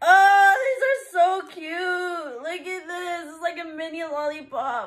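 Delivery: high, happy sobbing through tears. Receiving an anniversary gift, crying happy tears. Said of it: "I'm crying".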